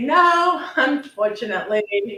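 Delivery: mock, high-pitched, laughed-out words. Speaker retells answering wives who asked a personal question: retelling a laughing reply. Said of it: "throw back my head and laugh and say".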